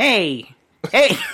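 barking 1930s gangster voice.

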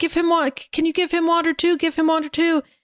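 acted, high-pitched, urgent yell. Retelling a plot, quoting a character who yells at captors: imitating someone yelling. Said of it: "Luke is yelling".

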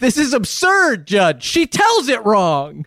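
acted-out high, swooping, indignant and outraged outburst. Retelling a cartoon caption, the husband's protest: acted screaming husband. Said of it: "the husband screaming".

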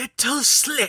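hissing the words out. Narrator reads Agnes's line as she closes in, hissed. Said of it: "she hissed".

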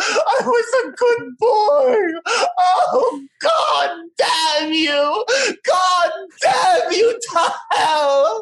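bad put-on accent, high, slow, pleading wailing sob.

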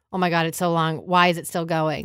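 usual speaking voice

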